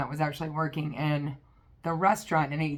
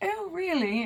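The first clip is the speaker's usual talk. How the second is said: put-on terrible British accent, pitched very high; 13 semitones higher than usual. Retelling a conversation, act out what he said back in a terrible English accent. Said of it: "I'm got a terrible English accent".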